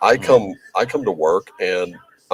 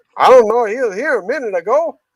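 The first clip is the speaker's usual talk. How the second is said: put-on Cajun accent, pitched higher. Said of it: "that is pretty good New Orleans accent".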